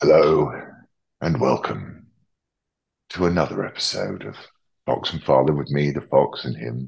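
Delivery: bassy, deep, dramatic baritone intro delivery. Opening another episode of the show with a dramatic introduction. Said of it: "This sounds like a dramatic introduction".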